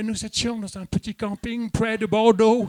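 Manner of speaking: put-on French spoken with an English accent. Imitating the stepfather speaking french to english speakers: french with an english accent. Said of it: "il parle français mais avec un accent anglais".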